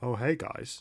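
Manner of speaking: soft, casual, totally unbothered, very nonchalant tone. Narrating a character who bursts in and greets the group, very nonchalant. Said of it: "very nonchalantly says".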